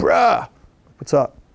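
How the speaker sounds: dude-like voice. Retelling a late-night call from a publisher: imitating a San Diego bro. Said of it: "a bro from San Diego originally".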